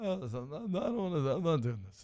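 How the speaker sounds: soft, vampire-like voice. Speaker retells what Larry David said at SNL fifty: Larry David impression. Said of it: "sounded- Dracula".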